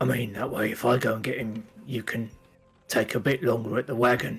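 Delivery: clumsy would-be low, secretive, conspiratorial voice. Retelling what he says to someone, in an attempted low voice. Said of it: "in what he thinks is a kind of low voice".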